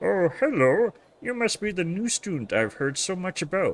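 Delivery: put-on cartoon alien voice. Voicing the cat teacher greeting a new student: Marvin the Martian voice. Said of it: "Marvin the Martian style?".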